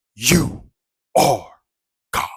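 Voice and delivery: thundering, booming, very loud godlike voice. Speaker recounts a voice heard while dozing off, imitating a booming voice.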